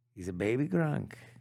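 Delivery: put-on voice, low, deep, soft and hushed. Asked to do it in a Trump voice; Donald Trump impression. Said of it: "Can you do it in a Trump voice for me".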